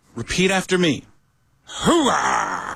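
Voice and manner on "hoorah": rough, gravelly voice ground from the throat. Teaching a class to repeat after him: deep gravelly Al Pacino voice. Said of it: "the voice is deep and gravelly in the back of your throat. You are Al Pacino".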